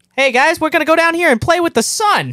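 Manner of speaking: very high, loud, squeaky, silly cartoon bird voice. Voicing a funny cartoon bird on a ranch: put-on funny cartoon bird voice. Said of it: "That's a funny bird with a straw in its mouth".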